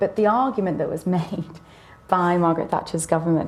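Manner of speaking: words breaking into laughter while talking. Explaining a government's argument on renting, laughing while talking. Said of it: "sorry I'm laughing".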